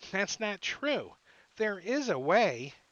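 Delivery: high, loud, huffy, snorting angry gnome voice. Voicing a gnome who angrily stamps his foot, angry snorting gnome. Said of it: "angrily stamps his tiny foot and snorts".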